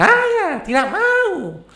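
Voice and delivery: Papuan accent, very high and swooping. Comparing Indonesian regional accents, a line in a Papuan accent, somewhat high. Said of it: "Kalau logat dari suku Timur, ya Papua masing-masing agak meninggi".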